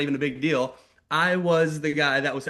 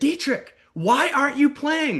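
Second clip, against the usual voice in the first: acted out, very high-pitched, shrill yell; 11 semitones higher than usual. Retelling how the teacher called out a student in class: imitating a teacher yelling. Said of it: "yelled at him and said".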